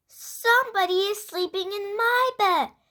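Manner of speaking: high, loud, wee little voice. Narrator reading a story aloud, speaking Baby Bear's line in a wee little voice. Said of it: "said Baby Bear in his wee little voice".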